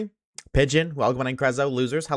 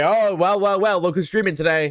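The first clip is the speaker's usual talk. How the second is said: play-acted, snarky, taunting, pitched-up mocking jeer; 6 semitones higher, 4 dB louder than usual. Imitating chat mocking the streamer for streaming: imitating chat yelling. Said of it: "you guys are gonna yell at me".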